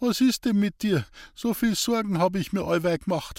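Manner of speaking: stammering. Narrator reading Hans-Peter's line to Mandy, who has waited two hours; stammering. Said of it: "stammelte Hans-Peter".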